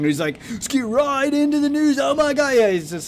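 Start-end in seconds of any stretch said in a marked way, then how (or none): 0.6-2.5 hammy, over-the-top delivery with pitch pushed way up. Mocking a news channel host: imitating Drama Alert's over-dramatized voice. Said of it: "he's putting on a voice and, like, over dramatizing".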